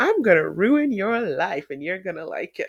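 mock cheeky, sassy, flirtatious teasing. Retelling a line a country twink said, mock-sassy and flirty. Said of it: "really sassy and flirty".

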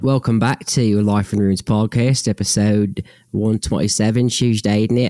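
put-on fake Australian accent. Welcoming listeners back to the podcast episode: put-on Australian accent. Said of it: "I just went Australian for whatever reason".

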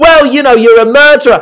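high, loud, accusing tone of voice.

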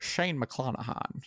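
breathy whisper in a film-star voice, breathed out. Asked to say the name Shane McClanahan, in a Sean Connery voice. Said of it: "Can you do Shane McClanahan in the Sean Connery voice?".

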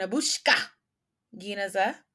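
said with a Russian accent. Naming a favorite anime character: name said like a russian. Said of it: "I felt like I had to say it like a Russian".

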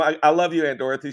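ordinary talk, nothing marked

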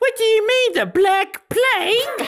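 very high, loud put-on British farmer voice. Quoting the British farmer from a film they watched: British farmer accent. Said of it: "The British one".

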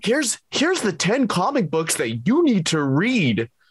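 corny, high, silly countdown announcer voice. Joking about comic book lists, in a WatchMojo list voice. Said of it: "It's a stupid list voice".

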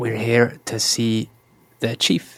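hushed whispering. In a role-play, a player's character whispers into a companion's ear: whispering. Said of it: "And I whisper in Kreestor's ear".

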